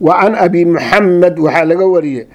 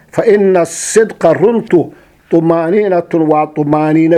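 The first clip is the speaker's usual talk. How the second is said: ordinary delivery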